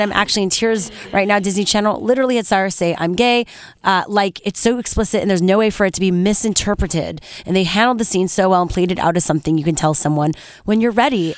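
ordinary delivery

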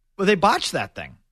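ordinary talk

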